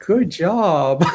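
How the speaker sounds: high, praising kindergarten-teacher voice. Retelling how she spoke to people, in a kindergarten-teacher voice. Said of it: "she sounded like a like a kindergarten teacher".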